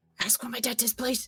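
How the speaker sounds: rapid muttered speech. A player speaking to Fionn in passing, fast under the breath. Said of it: "really fast under my breath".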